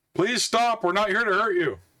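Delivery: called out at a high pitch. Calling out in character for a creature to stop: yelling. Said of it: "I'm gonna yell out in Draconic".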